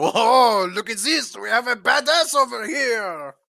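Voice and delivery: very high, loud, taunting, sarcastic surprise. A game master voices a gnome and halfling reacting to drawn daggers, gnome and halfling exclaiming. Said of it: "they hold their hands up like".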